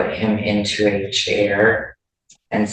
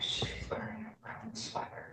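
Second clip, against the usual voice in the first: barely audible voice, higher and quieter; 13 semitones higher, 21 dB quieter than usual. Answering a question in the courtroom: very quiet voice. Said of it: "I can hear the answer, but just barely".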